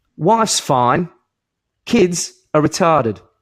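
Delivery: high, slow, dry deadpan delivery. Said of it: "And then Botham goes".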